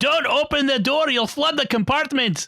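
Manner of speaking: put-on Scottish accent pitched very high. Retelling what one video game character said to another: Scottish accent. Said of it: "in a Scottish accent".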